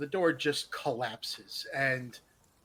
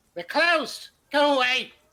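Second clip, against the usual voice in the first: reedy shriek, very shrill, very high and loud; 11 semitones higher, 8 dB louder than usual. After heavy knocking on a wooden door, a voice answers in a reedy, high-pitched voice. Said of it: "a reedy, high pitched voice says".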